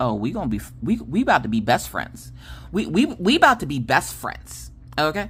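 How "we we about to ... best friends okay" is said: normal talking voice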